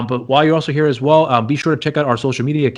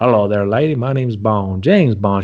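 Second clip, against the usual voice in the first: laid-on, drawn-out Southern drawl; 3 semitones lower than usual. Joking about how James Bond would sound: James Bond with a Southern drawl. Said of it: "Imagine James Bond having that Southern drawl".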